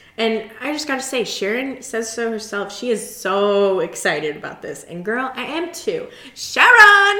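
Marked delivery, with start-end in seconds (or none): 6.4-7.2 badly done yell, very high, very loud. Trying to imitate him calling out a name, bad impression of him yelling sharon. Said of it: "That's not correct".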